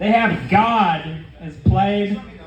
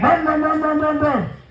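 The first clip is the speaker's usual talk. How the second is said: high, revving truck engine noise. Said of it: "It was like".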